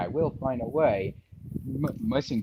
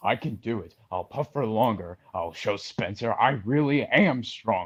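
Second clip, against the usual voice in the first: storybook engine voiced like a mid-forties man; 3 dB louder than usual. Giving an example of a voice actor's Thomas voice: imitating Martin Sherman's Thomas voice. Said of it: "how can I give an example?".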